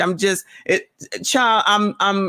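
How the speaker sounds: stammering restarts, tripping over words, disbelieving. Thanking a viewer for the highest super chat ever: stuttering in disbelief. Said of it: "I'm stuttering right now because I can't even believe it".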